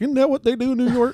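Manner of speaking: high, naive, put-on country bumpkin voice. Mocking own earlier question about new york: put-on bumpkin voice. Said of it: "I sound like such a fucking bumpkin, being like".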